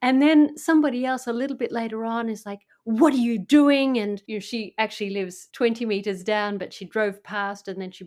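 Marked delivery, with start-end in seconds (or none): 2.8-4.0 imitated yell, higher and louder. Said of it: "she yelled at me".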